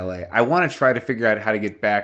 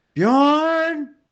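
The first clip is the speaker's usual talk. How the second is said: very high, shrill, stretched-out yell; 4 dB louder than usual. Calling out for a missing companion in the snow: yelling a name. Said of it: "I'm gonna yell one more time for free".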